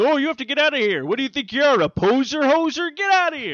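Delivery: very high, loud, stern, dismissive scolding tone. Joking about a friend turned away at the Canadian border: imitating Canadian border guards. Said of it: "they're like".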